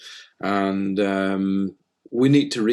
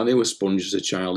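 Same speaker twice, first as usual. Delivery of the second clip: normal talking voice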